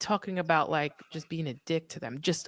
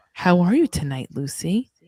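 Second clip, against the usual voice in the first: mock creepy flirtatious voice, getting louder; 7 dB louder than usual. Imitating a coworker talking to a waitress: imitating a creepy coworker.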